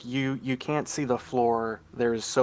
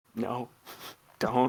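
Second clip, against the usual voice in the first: mock dragon whispering voice. Voicing a pseudo dragon warning a player in their ear: pseudo dragon whispering. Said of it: "the pseudo dragon is kind of whispering in your ear".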